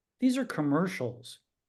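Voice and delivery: put-on dismissive, contemptuous, scornful, disdainful tone. Retelling how a man reacted to his reel after two minutes: mock-disdainful. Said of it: "with such disdain in his voice".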